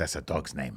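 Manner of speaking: put-on English with Paraguayan accent. Retelling how mom objected to a baby name, Paraguayan accent. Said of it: "in her Paraguayan accent".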